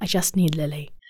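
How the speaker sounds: put-on gentle, sweet Irish accent. Retelling what a woman from Ireland said, in a sweet Irish accent. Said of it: "I don't even know if I can do the accent".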